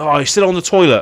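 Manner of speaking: loud, high shouting.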